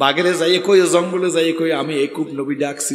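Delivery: ordinary talk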